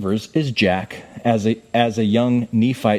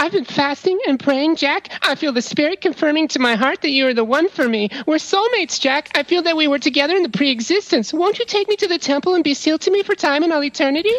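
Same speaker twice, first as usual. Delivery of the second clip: put-on girl voice, higher pitched.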